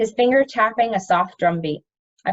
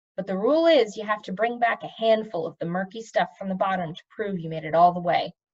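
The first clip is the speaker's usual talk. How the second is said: ordinary delivery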